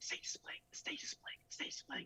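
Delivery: soft, breathy whisper under the breath. Retelling dancing with a partner as the stage splits: retelling a whisper. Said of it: "I'm whispering to her".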